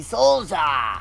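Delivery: shouted out, loud exclamation. Finding a name he thought was cool, exclaiming it loudly. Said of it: "I exclaimed it very loudly".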